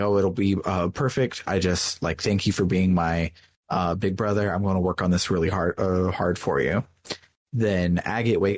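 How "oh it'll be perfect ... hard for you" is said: ordinary delivery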